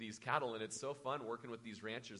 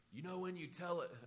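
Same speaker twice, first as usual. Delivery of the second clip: put-on Scottish accent, higher-pitched; 7 semitones higher than usual. Retelling what a critical kid said after service: imitating Ken's Scottish accent. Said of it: "he always spoke in a Scottish accent".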